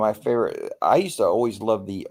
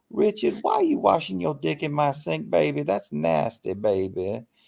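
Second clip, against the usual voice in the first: put-on crackly, creaky old grandmother voice, high pitch; 7 semitones higher than usual. Retelling a remembered skit, imitating the performer's grandmother. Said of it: "he was talking like his grandmother".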